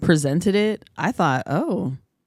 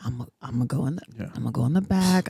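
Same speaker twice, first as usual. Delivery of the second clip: put-on conspiratorial tone, lower and quieter; 4 semitones lower, 5 dB quieter than usual. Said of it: "homie hookup thing where they're like".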